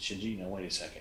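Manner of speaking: very calm, soft voice.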